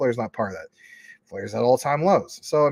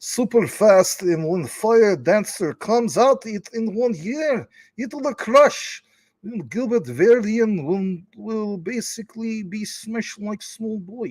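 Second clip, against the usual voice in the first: very high, fake Russian accent; 9 semitones higher than usual. Repeating the previous line, this time in a russian voice. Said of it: "I guess we could do that in a you know Russian voice".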